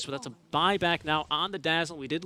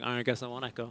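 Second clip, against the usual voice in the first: put-on sad boy voice, lower; 5 semitones lower, 5 dB quieter than usual. Quoting another player's reply during a game, in a put-on sad boy voice. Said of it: "my sad boy voice".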